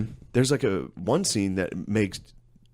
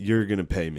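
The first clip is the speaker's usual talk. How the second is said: put-on snarky movie-hero voice. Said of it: "Ryan Reynolds keeps doing that snarky thing".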